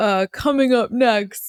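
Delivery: intense trailer announcer voice. Describing their voiceover-artist dad, the speaker imitates his intense movie trailer voice. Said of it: "like trailer um voice kind of thing".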